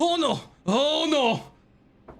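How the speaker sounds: very high, very slow, drawn-out alarmed cry. Game master voicing someone unseen in the darkness who begins yelling. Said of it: "you hear someone begin to yell".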